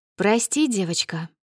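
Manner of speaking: ordinary delivery, nothing marked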